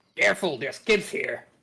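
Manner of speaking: roughened, raspy put-on voice. A player in a game yelling back in character, raspy put-on voice. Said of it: "try to make my voice raspy like like his".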